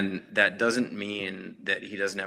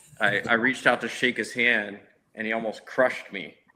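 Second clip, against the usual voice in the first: usual speaking voice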